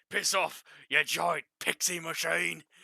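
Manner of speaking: fantasy orc character voice. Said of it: "you properly worded that".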